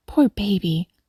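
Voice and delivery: plain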